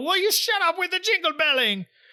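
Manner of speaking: very high, barging-in, storming outburst. Retelling a pirate boss storming out of bed: imitating Don Carnage. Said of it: "Come storming out".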